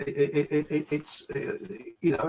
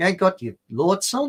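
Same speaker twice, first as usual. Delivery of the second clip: imitated Australian accent; 4 semitones higher than usual. Retelling a woman's words, put-on Australian accent. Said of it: "I could do an Australian one".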